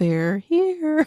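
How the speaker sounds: mock ghostly little girl voice. Reading a listener's ghost story, imitating the Poltergeist line: Poltergeist little girl voice. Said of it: "Kinda like Poltergeist".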